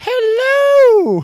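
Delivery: shrill, booming, high belting, held long. Showing their own version of the hello: Mrs. Doubtfire impression. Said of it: "mine's like".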